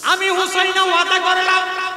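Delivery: high, ringing, impassioned voice.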